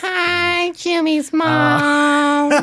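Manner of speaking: squeaky high cartoon voice, mom stretched. Doing a cartoon character's line after naming him: Carl Wheezer voice. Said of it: "Carl Wheezer from Jimmy Neutron".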